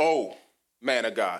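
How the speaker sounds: slow, drawn-out, teasing, sarcastic, mocking tone. Imitating how women mock men, mock-sarcastic mocking tone. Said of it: "why do y'all do that when you're mocking men?".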